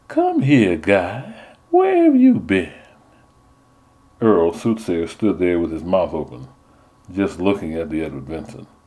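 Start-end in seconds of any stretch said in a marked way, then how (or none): 0.1-2.7 put-on high, sing-song Southern belle accent. Narrator reads a woman posing with hand on hip, southern belle voice. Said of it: "she spoke like a southern belle".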